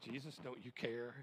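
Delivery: ordinary talk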